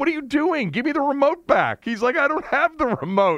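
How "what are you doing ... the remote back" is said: put-on high, demanding yell. Retelling yelling at his son for the remote, retelling a yell. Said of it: "I yelled at Corbin".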